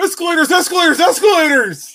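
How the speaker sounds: very high, loud, belted cartoon voice. Showing another speaker a Patrick Star impersonation. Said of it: "I do a really good Patrick Star impersonation".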